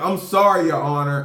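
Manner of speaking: acted, broken-up speech bubbling over with laughter. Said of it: "I keep laughing".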